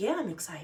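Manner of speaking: mock cool, calm, quiet, all-calm tone. Retelling his reply to the pregnancy news: imitating someone all calm. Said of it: "Like, all calm".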